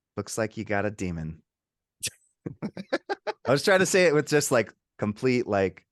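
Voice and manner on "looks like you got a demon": dead-level, flat, deadpan voice with no inflection. A podcast host quotes a movie line the way the actor said it: imitating a flat delivery. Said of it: "It's just so flat".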